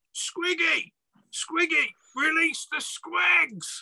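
shrill, very high-pitched goblin yell. Narrator voicing a goblin running out and calling across the courtyard: goblin shouting. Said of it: "And he shouts".

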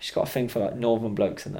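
normal talking voice

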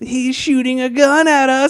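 very high, acted, stretched-out, drawn-out shriek. Recapping a movie, acting out a character's line as they drive away: screaming. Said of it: "he screams".

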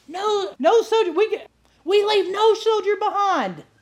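loud high-pitched screaming. Retelling how a guide called Tarzan urged tired walkers on: imitating Tarzan screaming. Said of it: "he's screaming over the top of these girls".

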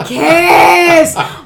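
imitated yelling. Retelling yelling at two characters on screen: imitating own past yelling. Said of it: "I just started yelling".

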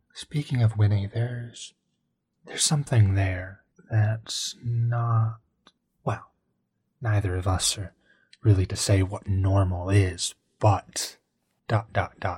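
hushed voice. Speaking in character during a roleplay scene: more hushed tone. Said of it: "I start speaking in a more hushed tone".

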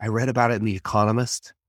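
mock, put-on whispering. Imitating how really smart people answer a money question: imitating a whisper. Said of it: "the really smart people say in a whisper".

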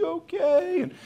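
very high, shrill, screamed call. Retelling how Yvette called out the door to a fallen girl: imitating someone screaming. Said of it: "She's screaming out the door".

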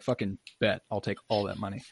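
ordinary talk

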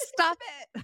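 very high, frustrated, fed-up yell. Retelling a yell at a sunbeam in the face: imitating Everett yelling. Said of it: "Everett will yell at wind and sunlight".

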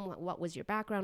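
normal talking voice

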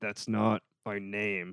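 slow words pushed through clenched teeth. Retelling a comedian's reply after his name was said wrong: imitating Tony Rock through clenched teeth. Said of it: "with his, like, teeth, like, clenched".

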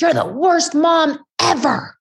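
mock furious scream, high, at full volume. Mother retells her daughter catching her eating her burrito, retelling a top-of-lungs scream. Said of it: "she yelled and screamed at the top of her lungs".

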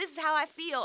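high, mock sassy voice with attitude.

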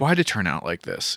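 low, exhausted, annoyed, fed-up grumbling mutter. Retelling a scene where a character gets over a wall: imitating an annoyed, tired character. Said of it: "so fucking annoyed and just, like, tired".

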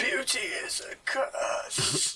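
croaked out in a hoarse voice. A game master voices a man lying on the ground, speaking to the players: croaking. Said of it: "He croaks out at you".

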